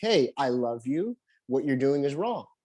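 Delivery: ordinary delivery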